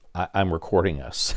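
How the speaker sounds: ordinary talk, nothing marked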